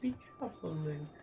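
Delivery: soft, laid-on, put-on English accent. Playing a game, the speaker addresses the character Link: English accent. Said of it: "I'm going to tell you with my English accent".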